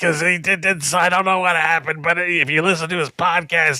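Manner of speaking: teasing, high-pitched put-on caricature talking voice. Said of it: "he talks like this".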